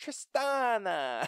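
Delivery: put-on very high Italian accent. Retelling how someone always called a name, stereotypical Italian accent, stressed ending. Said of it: "in the most stereotypical Italian accent that you can, like, that's exactly how she said it".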